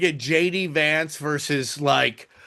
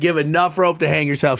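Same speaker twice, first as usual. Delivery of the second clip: ordinary talk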